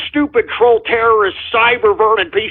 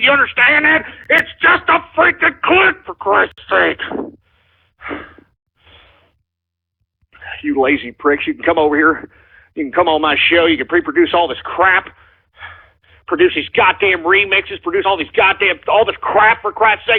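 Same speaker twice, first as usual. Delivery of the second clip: furious, fed-up, pissed-off ranting tirade; 3 semitones lower than usual. A show host rants at the audience, angry ranting. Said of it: "I'm pissed off".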